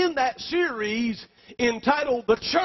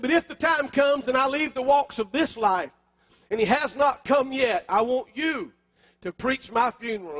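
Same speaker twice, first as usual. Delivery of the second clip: usual speaking voice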